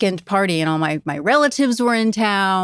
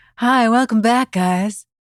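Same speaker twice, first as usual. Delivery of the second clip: gentle, soothing, mellow radio host voice; 3 semitones higher than usual. Podcast co-host welcoming listeners back, soft rock radio DJ voice. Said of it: "we're like the D Js in a soft rock station".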